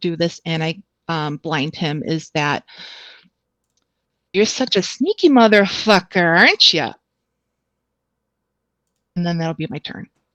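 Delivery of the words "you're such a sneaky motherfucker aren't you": put-on Wisconsin-accented character voice. Taunting a blinded enemy in character: Wisconsin accent. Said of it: "The accent and everything".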